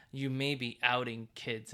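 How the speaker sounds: ordinary talk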